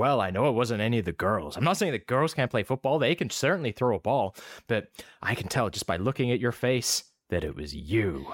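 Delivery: imitated American accent. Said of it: "maybe I'll just go with American".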